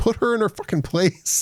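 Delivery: high, exasperated mock yell.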